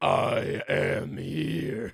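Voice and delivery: dropped, deep, put-on demon-like announcer voice. Imitating a man who speaks in a deepened voice. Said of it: "deepening his vo-, he's like".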